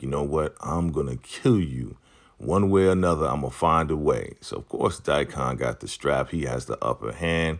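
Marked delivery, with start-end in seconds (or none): 0.0-4.3 put-on furious, raging, enraged delivery. Retelling a show scene where one character threatens another: imitating an enraged threat. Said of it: "Brian is enraged at this point".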